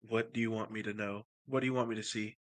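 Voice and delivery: hushed, soft half-whisper. As a tiefling character, softly half-whispering to himself. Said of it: "softly just says to himself".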